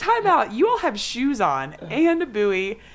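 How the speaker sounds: mock call, high and loud, slowing at the end.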